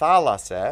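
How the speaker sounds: thalassa with stress on la, hit loud. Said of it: "we've got".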